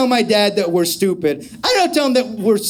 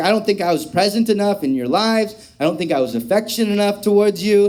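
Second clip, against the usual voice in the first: ordinary talk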